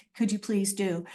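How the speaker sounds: ordinary talk, nothing marked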